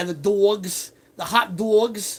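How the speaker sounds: put-on slow New York accent, "dogs" stretched long. Retelling a date, imitating the dates' accent: imitating a new york accent. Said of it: "they would talk like that".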